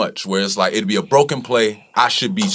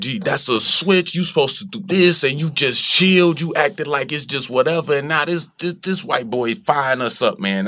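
play-acted, heated, angry rant, mild yell; 5 semitones higher than usual. Retelling yelling at a teammate during a game: retelling yelling at a teammate. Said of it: "I'm yelling at Melo like".

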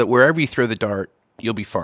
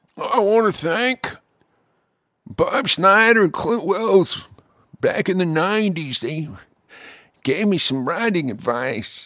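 put-on elderly man voice, higher pitched; 7 semitones higher than usual. Imitating a friend thanking two people at the Grammys: imitating Zach as an elderly man. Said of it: "This is the way he sounds".

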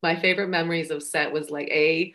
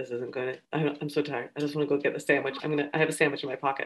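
put-on muttering under the breath, lower and quieter; 3 semitones lower, 7 dB quieter than usual. Retelling how Trevor muttered between takes: imitating Trevor muttering under his breath. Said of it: "Trevor would start talking under his breath".

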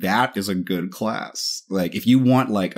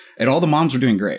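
ordinary talk

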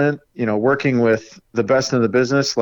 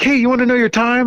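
put-on bubbly radio voice, high, fast, excited; 11 semitones higher than usual. Retelling what an excited radio guy said to the speaker, imitating an excited radio guy. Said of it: "the radio guy is like all excited".

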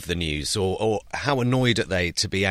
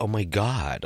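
really flamboyant, camp voice. Describing a satirical Trump dub, showing its voice: camp Sassy Trump voice. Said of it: "he just does it in a really camp voice".

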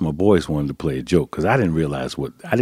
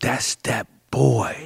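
mock schoolgirl shriek, high, raspy, rough, excited; 8 semitones higher than usual. Retelling how schoolgirls at halftime reacted on seeing him: imitating girls screaming. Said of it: "they started screaming".

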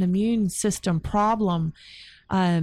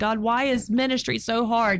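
put-on crying out, slower; 3 semitones higher than usual. Describing a vision of sitting on the end of a dock, retelling crying out to god. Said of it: "I'm like crying out to God".

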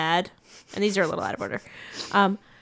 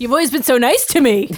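dry, sarcastic reading in a raised voice; 4 semitones higher, 5 dB louder than usual. Reading out Kurt's line after picking him: sarcastic reading of Kurt's line. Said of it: "Maybe that was sarcastic".

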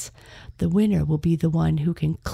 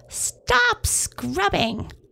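very high-pitched, shrill troll yell. Long Nose yells at the trolls scrubbing the blackening shirt. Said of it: "Long Nose yelled".

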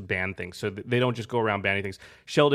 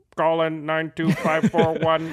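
put-on evil robot voice, higher pitched; 6 semitones higher than usual. Thanking a Twitter user who suggested the topic, reading his handle in Dr. Evil crossed with robot voice. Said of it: "That was like Dr. Evil crossed with a robot".

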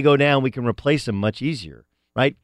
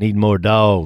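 put-on coach voice, pitched lower; 4 semitones lower, 3 dB louder than usual. Imitating a former Coastal Carolina head coach's catchphrase: imitating a Coastal Carolina coach. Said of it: "head coach of, um, Coastal Carolina? Like".

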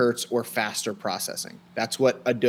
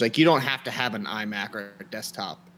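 ordinary talk

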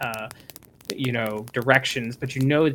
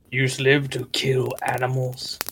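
quieter dark deity voice. The narrator voices Mir God speaking in a character's mind: dark voice of Mir God. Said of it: "you hear in your mind the dark voice of Mir God".

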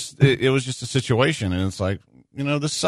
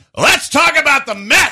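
shrill, loud, high yell; 13 semitones higher, 6 dB louder than usual. Imagining how Patrick would react to someone crying, doing a Patrick Creighton impression. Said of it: "It's a pretty good Patrick Creighton".

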